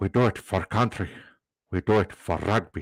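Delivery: put-on South African accent. Joking about how the early broadcasts sounded: Nelson Mandela impression. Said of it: "that's my, uh, Nelson Mandela impression".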